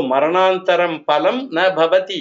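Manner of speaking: ordinary delivery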